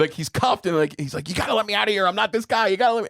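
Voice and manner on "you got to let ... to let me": off-the-rails, high, rattled-off shrieking scream. Retelling a movie scene of a handcuffed man pleading to be let out: imitating Richard Dreyfuss screaming. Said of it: "and he's screaming".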